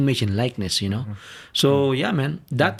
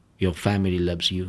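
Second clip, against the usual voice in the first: put-on peaceful, loving, caring voice, lower; 6 semitones lower than usual. Retelling a voice in the speaker's head: imitating a peaceful, caring voice. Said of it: "peaceful voice, like, very caring, loving voice".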